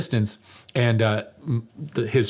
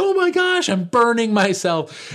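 mock shrill, very high, panicked startled scream; 12 semitones higher than usual. Telling how the speaker spilled hot coffee on themself, retelling a startled scream. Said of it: "startled and screaming like".

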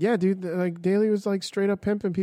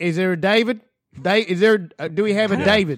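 horrible, bad fake Australian accent; 5 dB louder than usual. Mocking an Australian who called out names, the speaker does a horrible Australian accent. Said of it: "Your Australian accent also is horrible".

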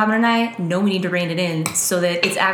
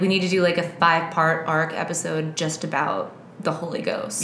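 ordinary talk, nothing marked

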